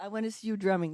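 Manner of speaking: ordinary delivery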